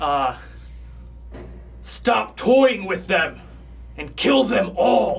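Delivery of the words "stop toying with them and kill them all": very loud, stern, commanding voice from afar. Voicing a distant figure commanding its minions: very loud stern voice. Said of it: "a very loud, stern voice".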